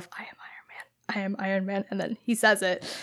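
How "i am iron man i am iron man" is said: whisper, much quieter, lower, slower. Recalling watching the film before the hero's line, whispering to oneself. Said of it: "I'm like whispering to myself".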